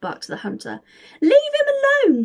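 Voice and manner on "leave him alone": shrill, very loud, very high scream, "him" stretched. William shouts at the hunter who has just barked at santa, screaming. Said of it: "screamed William".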